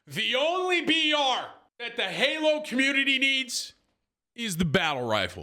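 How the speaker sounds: heavily sarcastic, very high-pitched mock-sincere tone. Responding to a comment that halo needs a battle royale: heavily sarcastic. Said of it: "I'm being heavily sarcastic".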